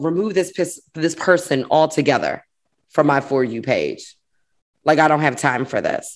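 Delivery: ordinary talk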